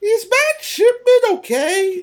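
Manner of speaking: very high, shrill, horrible shrieking voice. Speaker doing a quick bit before commenting on it: horrible Lilac impression. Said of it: "my horrible lilac impression".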